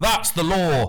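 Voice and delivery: sharp, angry snap. Reading a story aloud, the official turning on a boy: snapping angrily. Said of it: "the proctor snapped".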